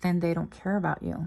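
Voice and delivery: hushed, very quiet, soft, almost murmured. Retelling what a lady said to a man after pausing: imitating someone speaking very quietly. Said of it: "very quietly she goes".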